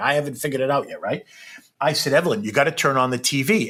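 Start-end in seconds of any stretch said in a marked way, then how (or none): none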